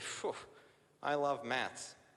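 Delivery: very slow, dry, sarcastic delivery. Retelling a frustrated group member's remark: imitating a sarcastic remark. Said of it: "says kinda sarcastically".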